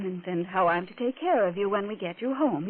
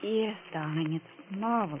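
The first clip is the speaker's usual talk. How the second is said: flat, unexcited, going-through-the-motions, unenthusiastic tone; 4 dB quieter than usual. Answering a husband's happy news about his sight: not sounding excited. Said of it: "you don't sound very excited".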